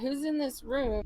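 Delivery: slow, deliberate calling out. Yelling a question at a guard while pointing at the door: yelling at a guard. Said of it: "He's yelling at the closest guard".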